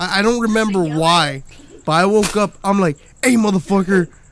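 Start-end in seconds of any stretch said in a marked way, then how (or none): 3.2-4.1 mock yelling, acted out. A parent recounting waking their kid up to yell at him: retelling a yell. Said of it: "I'm yelling at you now".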